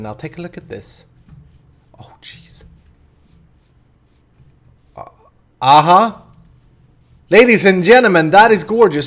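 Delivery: thrilled, gushing, loud and high-pitched delight. Showing off the lit-up build at sunset: excited. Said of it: "You can hear in my voice that I'm excited".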